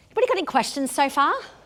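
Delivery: fast, high-pitched, excited rush of speech.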